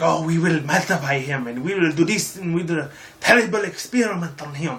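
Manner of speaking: put-on heavy, laid-on, thick European villain accent. Quoting an old Hydra agent from a story: thick European accent. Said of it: "He had a really thick ass accent".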